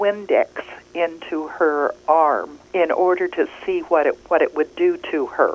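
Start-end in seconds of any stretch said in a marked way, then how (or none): none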